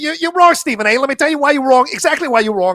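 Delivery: loud, high, heated debating voice. Doing an impression after saying there is no impression to offer: Mad Mike impression. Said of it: "Most I can do is maybe Mad Mike".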